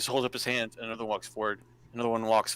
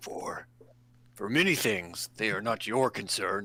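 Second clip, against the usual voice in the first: put-on orc character voice. Voicing an orc who refuses to explain: put-on orc voice. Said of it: "the orc glances back at the rest of his party".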